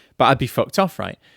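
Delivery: normal talking voice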